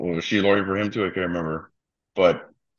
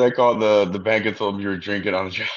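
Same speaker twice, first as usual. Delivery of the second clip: ordinary talk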